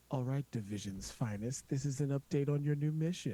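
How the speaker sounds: sultry on-air radio-announcer delivery. Imagining the voice of division as a siren giving updates, speaker uses a sultry radio voice. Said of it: "that sultry radio voice".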